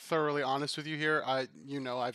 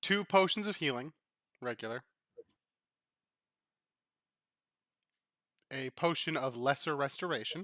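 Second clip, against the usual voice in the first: slow, deliberate, paced out word by word. Listing the items found in the box for the players: talking slowly. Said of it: "I'm gonna talk slowly".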